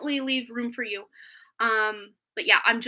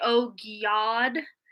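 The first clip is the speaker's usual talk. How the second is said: mock deep raspy smoker voice. Imitating how grandma said it when mad or flustered, grandma's deep smoker voice. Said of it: "My grandma had a very deep smoker voice".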